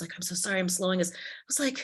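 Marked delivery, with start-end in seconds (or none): 0.2-1.1 mock-apologetic, profusely apologetic tone. Recounting a man who kept apologizing about his script, imitating a profuse apology. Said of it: "He was apologizing profusely".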